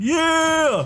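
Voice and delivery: excited, high, loud, triumphant yelling.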